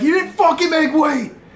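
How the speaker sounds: very high-pitched, shrill, full-volume screaming yell. Imagined commentary as someone gets on the scale, screaming. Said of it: "I'll be screaming it as they get on the scale. I won't be whispering it".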